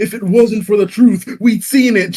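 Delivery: acted-out, very high-pitched, loud, heated angry rant. Recounting how she kept ranting with compelling arguments: mimicking her angry rant. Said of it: "She's literally ranting about this shit".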